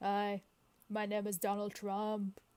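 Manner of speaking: slow, deliberate voice, word by word. Trying a podcast intro on request: Donald Trump voice. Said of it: "but in his voice".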